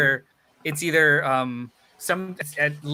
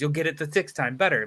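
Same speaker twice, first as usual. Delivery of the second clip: mock insistent, pressing, urging tone. Retelling how people keep urging a reread: imitating people pushing him to read. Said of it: "it's like they're chasing me".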